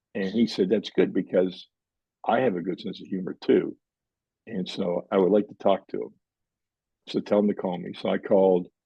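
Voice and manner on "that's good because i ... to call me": ordinary delivery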